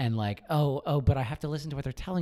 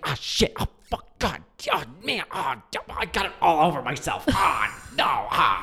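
imitated whispered yelling; 2 semitones higher, 5 dB louder than usual. Retelling how the person next to them reacted to a spill: imitating a whisper-yell. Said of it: "whisper yelling".

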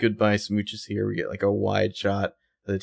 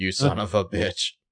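plain

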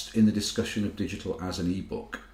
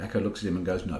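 plain

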